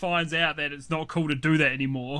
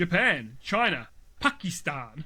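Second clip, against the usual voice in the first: Pakistan stressed hard, exaggerated native pronunciation, swooping tune. Act out Barack Obama talking about different countries, in a Barack Obama impression, stressing Pakistan. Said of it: "puts the emphasis on and tries to pronounce it that way".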